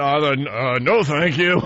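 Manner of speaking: swallowing hard, then slow, halting, polite, gulping delivery. Retelling how they answered after turning and seeing the thing, acting out a gulp. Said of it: "I gulped and went".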